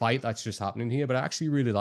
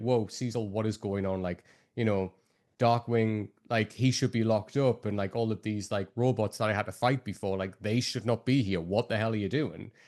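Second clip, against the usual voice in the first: normal talking voice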